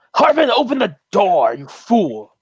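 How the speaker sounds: high call that swoops. Voicing Sildar calling out to someone inside: Sildar calling out. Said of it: "Sildar calls out".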